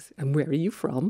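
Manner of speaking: put-on Cork accent. Quoting the first thing a man said when they met, in a cork accent. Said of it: "in his best Cork accent".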